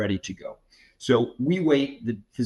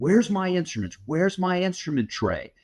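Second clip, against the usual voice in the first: high, acted-out, screamed put-on voice; 7 semitones higher than usual. Retelling a surgery where the doctor screamed at nurses: imitating a doctor screaming. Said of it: "the doctor starts screaming at one of the nurses".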